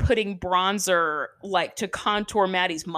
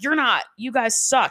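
put-on screaming; 3 semitones higher than usual. Retelling how a coach screamed at the children: imitating someone screaming. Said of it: "And she's screaming at them".

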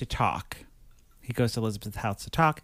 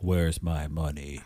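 very low, heavy, dropped pitch, put-on deep voice; 7 semitones lower than usual. Acting out a cigar-smoking man in an apartment, put-on deep voice. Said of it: "Got a real deep voice and he's like".

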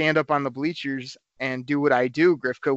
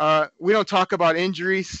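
put-on high, heckler-style, called-out interjection; 4 semitones higher than usual. Retelling calling out before the coach could answer about his leg: retelling own yell. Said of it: "I yell out".

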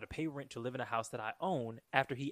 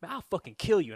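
mock aggressive, very loud, high yelling; 7 semitones higher, 9 dB louder than usual. Retelling a man's threat against him: mock-aggressive threat. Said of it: "that shit was aggressive".

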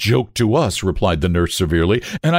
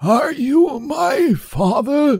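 put-on very high, cracked, ancient old man voice. Narrator reading a story, the old man suddenly speaks, in a cracked, ancient voice. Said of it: "spoke in a cracked and ancient voice".

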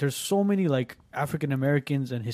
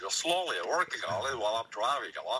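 bad put-on old politician voice, lower and quieter; 3 semitones lower, 6 dB quieter than usual. Playing back an attempt at an impression: failed Bernie Sanders impression. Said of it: "that does not sound like Bernie Sanders".

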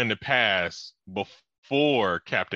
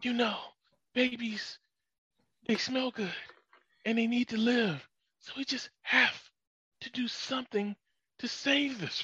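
urgent pleading half-whisper, very high and intense; 13 semitones higher, 7 dB quieter than usual. Mocking the captain on a canceled tv show, imitating intense half-whispering. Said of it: "it's like this intense whispering".

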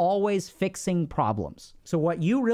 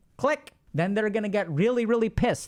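ordinary delivery

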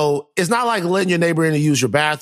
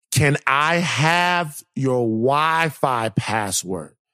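very slow, stretched-out delivery. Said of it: "is what she asked".

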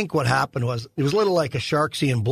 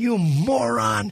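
screaming, pitched higher; 8 semitones higher than usual. Retelling a hockey brawl where the goalie yelled at him: imitating someone screaming. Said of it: "he's screaming at me".

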